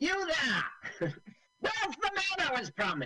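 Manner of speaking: very high, posh English gentleman voice. Describing a general who showed up as a special guest, Terry-Thomas impression. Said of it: "Are you doing your Terry Thomas impersonation?".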